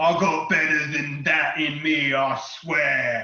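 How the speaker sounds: scornful, sneering, taunting tone. Game master voicing an attacker who just hit the player, sneering. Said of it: "he sneers at you and he goes".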